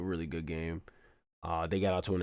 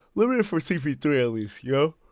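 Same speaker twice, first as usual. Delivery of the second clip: mid-yawn speech, very high and loud; 9 semitones higher, 10 dB louder than usual. Going over players after a basketball game, yawning while talking. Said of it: "Sorry, I'm yawning".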